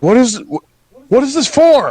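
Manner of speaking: very high, loud, stammering shout. Voicing Bulgrat as the others drop the money and run: Bulgrat yelling back. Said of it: "Bulgrat yells back like".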